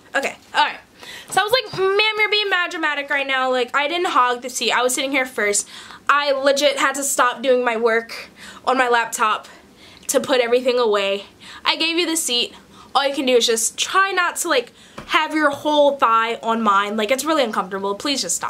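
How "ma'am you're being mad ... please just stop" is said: ordinary talk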